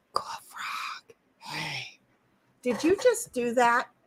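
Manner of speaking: slow, drawn-out whispered delivery. Retelling what someone else whispered, retelling a whisper.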